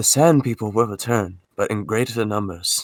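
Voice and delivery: low voice. Quoting a favorite line of Obi-Wan: Obi-Wan impression. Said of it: "I quote him all the time".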